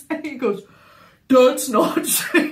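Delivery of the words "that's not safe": raised, deepened voice, like a man. Retelling how he imitates her, deeper than his own voice. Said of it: "his voice is deeper than his".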